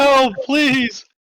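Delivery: very high, shrill, frantic, panicked screaming. Describing someone struggling to break free, voice his panicked screaming for help. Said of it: "is screaming like help".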